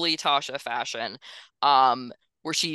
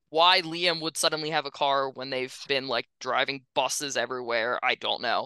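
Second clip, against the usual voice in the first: ordinary delivery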